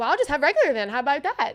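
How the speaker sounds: put-on attitude, sassy. Retelling own reply to a rude barista: imitating own sassy reply. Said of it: "got an attitude back".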